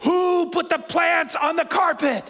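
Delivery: high, exasperated, losing-it shout. Telling a story, the speaker re-enacts the moment they lost it: retelling a yell. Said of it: "And I yell".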